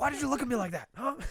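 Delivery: shrill, very high-pitched, put-on angry screaming. Imitating George from Seinfeld screaming at foreign officials: George screaming. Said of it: "starts screaming at them".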